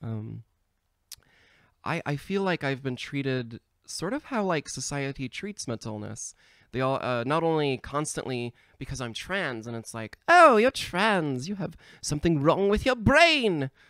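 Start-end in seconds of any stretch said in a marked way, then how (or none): 10.3-13.7 put-on comic British accent, pitched up. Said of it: "I just wanted to do a funny voice".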